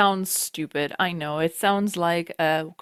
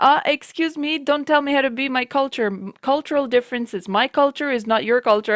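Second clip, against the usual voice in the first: loud, high, angry, indignant shout; 7 semitones higher, 5 dB louder than usual. Retelling what a player in voice chat said: imitating someone shouting. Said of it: "he started shouting at me".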